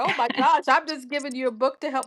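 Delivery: play-acted, choked-up voice catching with emotion. Retelling own words after someone cried over a gift book: imitating being choked up. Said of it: "getting all choked up 'cause I'm like".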